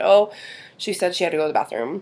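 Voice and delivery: normal talking voice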